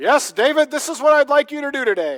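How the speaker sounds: big, booming, very loud, very high voice. Speaker imagining God answering him with instructions for the day, in God's big booming voice. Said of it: "in a big booming voice and say".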